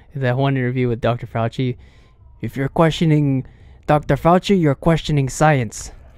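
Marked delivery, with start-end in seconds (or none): 2.4-5.9 put-on sinister dictator-like voice. Quoting an interview with Doctor Fauci: Fauci voice with Hitler twist. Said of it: "put the Mengele Hitler twist on that voice".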